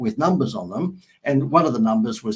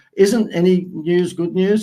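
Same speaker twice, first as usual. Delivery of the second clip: mock sarcastic, raised and pitched-up voice; 8 semitones higher, 6 dB louder than usual. Retelling a remark to the boss about the front page: retelling a sarcastic remark. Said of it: "I said to the boss sarcastically".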